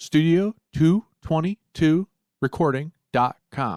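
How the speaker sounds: deliberate, careful word-by-word delivery. Giving listeners the link this week, saying it painstakingly slow. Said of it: "I said it painstakingly slow that time".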